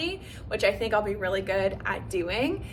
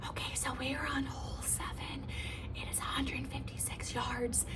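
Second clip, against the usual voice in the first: soft, breathy, very quiet commentator-style whisper; 3 semitones higher, 12 dB quieter than usual. Doing a little ASMR golf moment about hole seven, ASMR-style whisper. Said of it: "I'm whispering too much".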